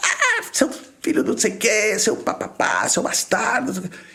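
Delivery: high, furious screaming and shouting.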